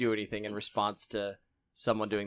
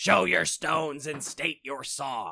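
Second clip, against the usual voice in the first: high, loud, echoey screaming statue-like voice; 5 semitones higher, 5 dB louder than usual. A game master voices one of the statues calling to the players: echoey screaming statue voice. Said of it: "an echoey voice ... that screams".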